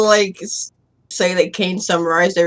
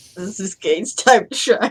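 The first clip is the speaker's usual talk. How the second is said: laughing while talking, giggling through words. Starting to speak in character in a game: laughing while talking. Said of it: "I gotta stop laughing".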